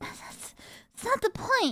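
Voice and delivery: loud yelling. Arguing with Rin about being a first, yelling. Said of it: "sorry for yelling".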